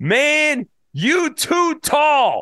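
very high, very slow, drawn-out shout. Retelling a passing guy yelling at him as they strolled by, retelling a stranger's yell. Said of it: "I hear this guy yell".

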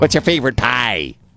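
high-pitched, thick Midwestern accent.

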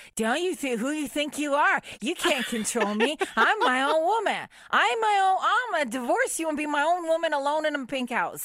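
mock high, belligerent, combative drunken tirade. Acting out her own reply to her husband when drunk: imitating her belligerent drunk self. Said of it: "I'm belligerent".

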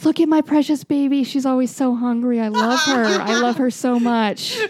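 slow, motherly put-on mom voice. Continuing the dinner scene, doting on the child: playing Caitlin's mom. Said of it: "And she's".

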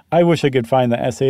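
ordinary talk

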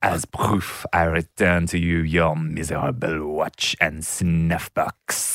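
badly done, butchered French accent. Quoting a line when asked, in a butchered French accent. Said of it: "I'm gonna continue butchering this accent".

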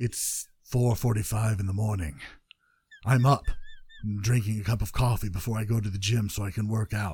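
soft, narrated voice-over, like a voice actor. Speaker announces they will voice-act Joe's life for a minute, voice-acting Joe's life. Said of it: "I'm going to voice act Joe's life".

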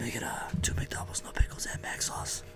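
breathy whisper, very soft. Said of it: "with whispering, too".

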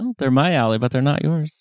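snarky, snide, sarcastic tone. Replying to another speaker about people at church: snarky tone. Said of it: "you say this in a snarky way".

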